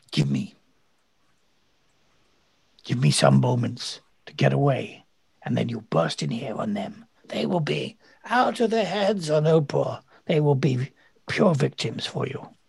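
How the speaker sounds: low, secretive, hushed conspiratorial half-whisper. Game narrator voicing a formerly loud guide at a door, half-whispering. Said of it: "so you're surprised to hear him whisper".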